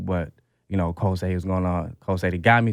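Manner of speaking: ordinary talk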